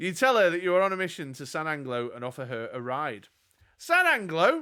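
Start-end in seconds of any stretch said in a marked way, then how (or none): 3.8-4.6 very high, loud, shouted yell. Narrator voices a woman offered a ride to San Anglo: yelling. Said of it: "she yells".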